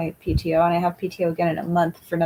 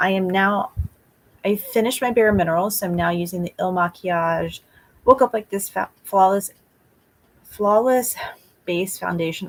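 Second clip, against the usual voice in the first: chatty, run-on, continuous narration. Describing the foundation being applied while doing makeup on camera, talking fast. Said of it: "I'm talking so fast".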